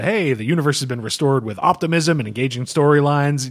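plain

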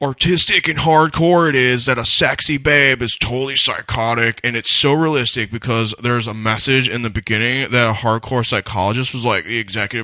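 put-on obnoxious, douchey bro-dude voice. On a friend's request, finishing a run-on sentence in a douchey bro voice. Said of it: "you have to do a douchey bro voice for the rest of this run-on sentence".

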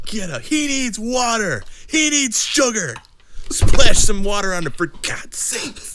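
very high-pitched, slow, drawn-out shouting. Retelling what a guy at the finish line yelled: imitating someone yelling. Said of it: "Yelling at me".

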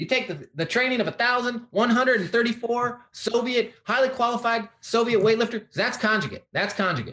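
very high lifting-coach voice. Answering a request to do an impersonation: Louis Simmons impersonation. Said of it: "I wanna hear this Louis Simmons impersonation".

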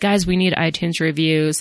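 ordinary talk, nothing marked

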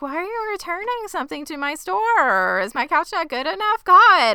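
play-acted, very high arguing. Retelling a scene where two characters argue: imitating someone arguing. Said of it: "And they're arguing".

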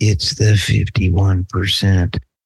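slow, deliberate, drawn-out, leaned-in delivery. Leaning into the mic to do a quick impression of Biden. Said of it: "I'm gonna do my Biden real quick".

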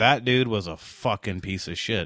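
ordinary delivery

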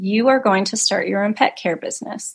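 put-on whisper. Retelling sitting up at night after a dream: imitating a whisper. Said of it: "I whispered to myself".

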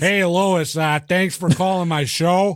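animated cartoon character voice. Redoing the line after being told it sounds like Peter Griffin: Peter Griffin voice. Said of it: "You sound like Peter Griffin".

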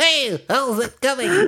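tiny, very high, squeaky gnome voice. Speaker describes how the gnomes sounded before slowing the audio: stereotypical little person voice. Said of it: "talking like real like stereotypical little person sounding".

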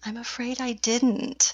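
bashful, ashamed, shy little voice, slow. Answering the other person's question, shyly. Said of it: "You say that so shyly".

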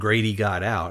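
ordinary delivery

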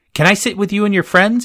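shrill, very high squeal. Antonia asks the narrator at the table, squealing. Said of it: "Antonia squealed".

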